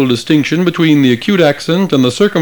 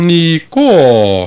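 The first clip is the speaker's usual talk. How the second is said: up-then-down pitch glide on last syllable "-ko" of niko. Demonstrating the greek circumflex accent, say niko with a rise-fall on the last syllable. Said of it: "notice the upward and downward glide in the last syllable".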